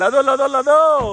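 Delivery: high, loud, excited calling out.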